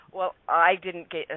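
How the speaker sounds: plain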